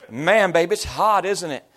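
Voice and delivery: slight, casual Tennessee Southern accent. Retelling talking to their partner after flying back from Tennessee, slight Southern accent. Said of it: "I've already got kind of an accent going on".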